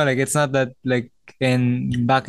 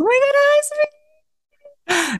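slow, high-pitched, drawn-out voice. Mocking how blockmates greet each other: imitating a higher-pitched greeting voice. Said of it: "have a higher voice".

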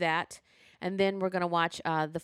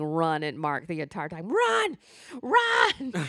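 put-on screaming. Retelling watching a dating show, imitating screaming at the tv.

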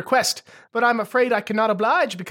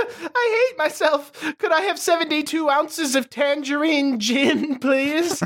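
crying and sobbing; 5 semitones higher than usual. After a harsh insult, the character orders a drink: crying. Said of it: "Percival starts crying".

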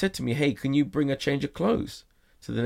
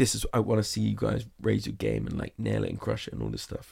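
very serious, totally earnest, no joking; 3 semitones lower, 3 dB quieter than usual. Retelling a judge's words to the contestants: serious Neil Patrick Harris impression. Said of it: "very serious".

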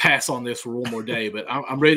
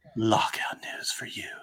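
put-on seductive voice, much quieter; 8 dB quieter than usual. A host announcing lockout news to viewers, in a mock-seductive voice. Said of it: "I was trying to be sexy".

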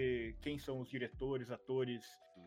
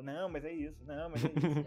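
mock stubborn, insistent delivery; 2 semitones higher, 4 dB louder than usual. Retelling own past words when stubbornly wrong: imitating own stubborn insistence. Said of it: "eu fico naquela".

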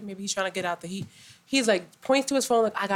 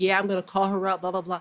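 ordinary delivery

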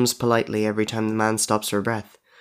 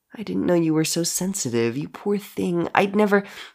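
high, cloying, sickly sweet pity; 7 semitones higher, 4 dB quieter than usual. She speaks to him in the voice his mother used, with cloying pity. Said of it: "The almost cloying pity in her voice".

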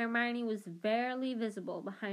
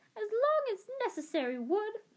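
strict, severe voice, very high and swooping; 12 semitones higher, 3 dB louder than usual. He retells the teacher's answer to his question, severe McGonagall impression. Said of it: "He screwed up his face and imitated Professor McGonagall's severe voice".

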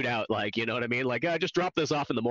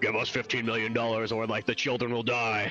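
deep, disguised movie-villain voice. Describing a hidden-face movie villain's ransom demand, in a deep villain voice. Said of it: "it's got like the deep voice put over the top".

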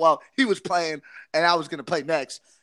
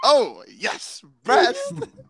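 mock thrilled, eager, high and swooping; 6 semitones higher than usual. Imitating another speaker saying a team name: imitating someone excited. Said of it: "He got so excited".

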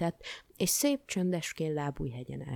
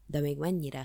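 plain

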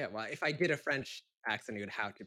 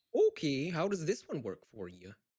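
put-on Minnesota accent; 2 semitones higher than usual. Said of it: "Can you do Minnesota?".

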